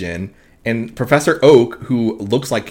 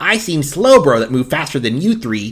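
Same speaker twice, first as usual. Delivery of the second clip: put-on cartoon cat voice; 3 semitones higher than usual. Recapping an episode, the speaker gives a favourite quote in a Meowth voice. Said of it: "let me do a voice".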